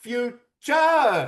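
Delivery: "future" in high, loud mock Thai accent. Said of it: "in your best Thai accent".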